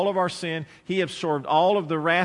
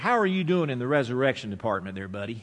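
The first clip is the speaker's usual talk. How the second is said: pointed, heavy, laid-on sarcasm; 5 semitones lower than usual. Addressing listeners who think they can bear their own sin, real sarcastic. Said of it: "And I'm being real sarcastic here".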